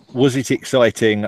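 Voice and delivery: ordinary talk, nothing marked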